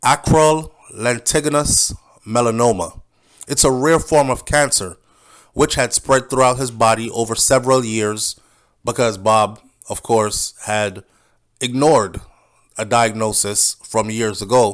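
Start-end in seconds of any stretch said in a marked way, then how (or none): 0.0-3.0 careful, slow, deliberate word-by-word pronunciation. Repeating a medical term so everybody can get it, said slowly. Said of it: "I say it slowly so everybody can get it".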